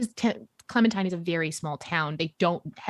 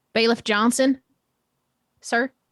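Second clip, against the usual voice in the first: raised voice, higher and louder; 4 semitones higher, 6 dB louder than usual. Answering, in character, a request to speak a little louder: speaking louder. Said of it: "If you could speak a little louder".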